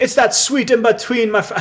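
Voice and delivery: bad put-on Jamaican accent, very high and loud. The speaker repeats an earlier phrase in a lame jamaican accent. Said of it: "That was a really lame Jamaican accent".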